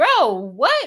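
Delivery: put-on yelling voice. Retelling yelling at the tv while watching the trial: imitating own yelling. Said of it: "I'm in here yelling like".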